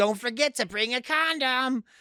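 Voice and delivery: put-on very high voice of a very old grandma. Retelling what a guy's grandma in her eighties told them, imitating a grandma in her eighties. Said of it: "this chick's in her eighties".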